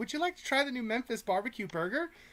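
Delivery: high-pitched, put-on woman's voice. Retelling a woman at Carl's Junior asking about the featured item, high-pitched voice. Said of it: "high pitched voice".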